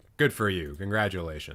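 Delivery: mocking, congratulating tone. Roasting a profile bio that copies someone else: sarcastic congratulations. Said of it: "Sarcastically, though".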